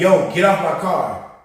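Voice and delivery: mock restrained, mild, urgent shout. Retelling screaming at a man holding onto the car: retelling a scream. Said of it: "I'm screaming to him".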